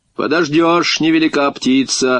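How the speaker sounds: plain reading voice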